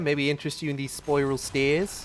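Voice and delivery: attempted, put-on New Zealand accent. Speaker showing someone spiral stairs, in an attempted New Zealand accent. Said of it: "I gave that a New Zealand accent".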